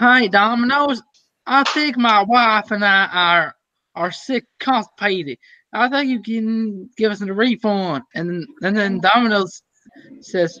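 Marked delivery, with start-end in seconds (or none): 0.0-8.0 faked, put-on Southern American accent. Acting out a guy calling Domino's, in a Southern US accent. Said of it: "he would talk like this".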